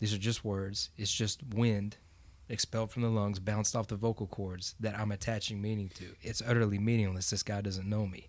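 ordinary delivery

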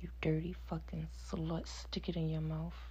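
gentle, soft, hushed sensual bedroom voice. Giving an example of the sensual tone of voice used, soft sensual tone. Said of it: "I still use a very sensual tone of voice. For example".

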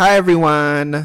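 screaming. Greeting everyone at the start of the episode: screaming a greeting. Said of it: "You're screaming".

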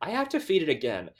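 very stern retort. Retelling a scene, answering another character's question, mock-stern as Miranda. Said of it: "Miranda very sternly says".

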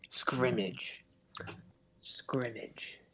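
soft whisper under the breath, to oneself. He repeats the word to himself as they walk in, said softly to himself. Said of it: "He just says it to himself softly".

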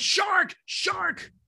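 very high, scared cry. Recalling being scared in the water as a boat comes back: retelling a yell. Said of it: "And I'm yelling".

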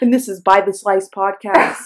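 tired, breathy public radio host voice. Introducing the podcast in a put-on bit: NPR-style radio voice. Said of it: "You sound like you're on NPR right now".

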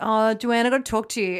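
mock, light, called-out voice. Retelling finding her sister at school, imitating own loud call. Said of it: "and really loudly".

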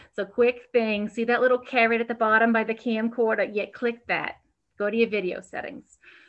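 put-on high, loud hostess accent. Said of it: "with my accent".

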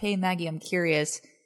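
put-on flat monotone. Telling the listener how their question came across, imitating a monotone. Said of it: "where you were saying monotone".

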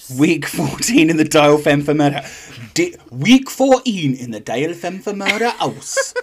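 Geordie-accented reality-show narrator voice. Repeating the episode intro in a Geordie accent: Big Brother narrator voice. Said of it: "I do a really good Geordie accent".

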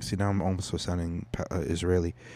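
ordinary delivery

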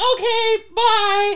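high squeaky insect voice.

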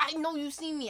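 mock annoyed, fed-up tone. Retelling the reply to a woman who hit the speaker's shoulder, retelling an irritated remark. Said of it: "I was so irritated".

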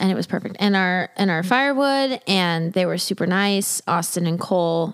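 normal talking voice

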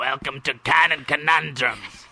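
goblin-like creature voice. Showing how the Canon Conundrums opening will sound; rogue goblin voice. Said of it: "Sound like a rogue goblin there".

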